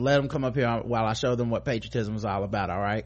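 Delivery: plain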